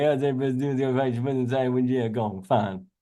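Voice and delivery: put-on Louisiana bayou French accent. Joking about how people in Louisiana talk, in a Louisiana bayou accent. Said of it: "anytime he's in French bayou".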